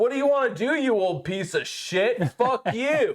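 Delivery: high, furious, combative angry screaming. Retelling yelling at an eighty-year-old man while golfing, re-enacting own screaming. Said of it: "Like I'm screaming at him".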